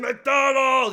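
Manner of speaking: loud, booming, huge giant's bellowing voice. Retelling being grabbed by the throat by a huge man: Andre the Giant voice. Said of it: "He had an Andre the Giant voice".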